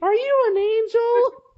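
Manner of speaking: very high, loud, squeaky cartoon mouse voice. Quoting a favorite movie scene to friends, Anakin in a Mickey Mouse voice. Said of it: "sound like a Mickey Mouse".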